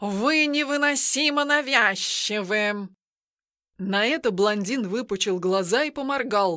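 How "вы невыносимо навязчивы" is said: sharply hissed, rebuking tone. Reading a cat's reply to a blond man in a story, hissed sharply. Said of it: "резко прошипел он".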